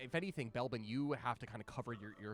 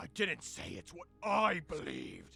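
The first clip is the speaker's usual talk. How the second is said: groaning in pain; 4 semitones higher, 6 dB louder than usual. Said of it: "as he just, like, groans".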